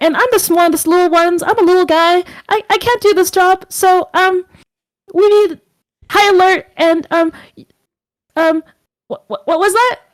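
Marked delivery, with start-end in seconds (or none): 0.0-3.7 small voice, higher pitched. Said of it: "that little Cupid voice says".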